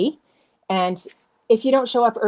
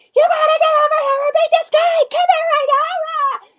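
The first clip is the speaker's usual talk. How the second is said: acted-out scream, much higher, louder; 5 dB louder than usual. Retelling meeting an author while camping and calling her companion over, retelling her own screaming. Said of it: "I'm screaming and making a lot of noise".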